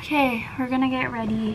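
breathless, winded, short on air. Speaker getting ready to study after cleaning, out of breath. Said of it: "I don't know why I'm so out of breath".

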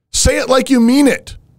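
high, mocking, nagging critic voice, put on.

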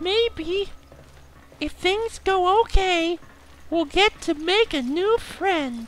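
high, soft voice bubbling with laughter. [name] talking to Mal as they explore, laughing in a high-pitched voice. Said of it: "[laughs, in high-pitched voice]".

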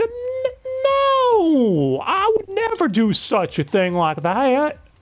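high, slow southern drawl, no stretched out. Recapping an anime scene, quoting Masaki, in Masaki's southern accent. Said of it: "I don't know why she turned southern there".

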